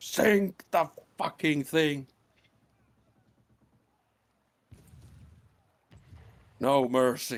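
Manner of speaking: shrill, very high, loud screaming. Voicing a character who screams to sink the enemy ship: Eligos screaming. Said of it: "Eligos is screaming".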